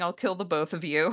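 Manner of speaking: ordinary delivery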